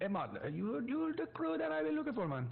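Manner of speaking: fake patois accent, very high and swooping. Narrating a scene, the speaker voices a man greeting the listener in a bad patois accent. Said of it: "with what is to be described as a bad patois accent".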